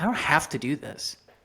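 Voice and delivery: ordinary talk, nothing marked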